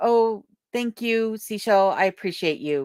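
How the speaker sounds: usual speaking voice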